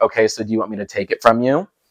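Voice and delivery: mock-condescending tone. Retelling your reply to a dramatic guest who called something an abomination: mock-condescending tone. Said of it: "go into this condescending tone".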